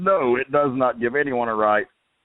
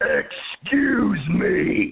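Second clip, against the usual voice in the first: higher-pitched preacher voice in pulpit style; 8 semitones higher than usual. Retelling how he addressed men sitting in his wife's seat, in a loud reverend voice. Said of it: "in my loudest reverend voice".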